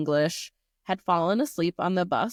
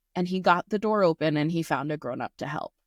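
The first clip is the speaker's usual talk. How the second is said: usual speaking voice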